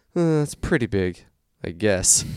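slow, drawn-out, deflated, sagging cartoon dad voice. Handed his order at a drive-through, speaker retells his reply: deflated Homer voice. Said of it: "in the most deflated Homer voice I could muster".

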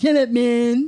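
put-on bro voice. Imitating bros who comment on a woman's column: bro impression. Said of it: "That's your bro impression?".

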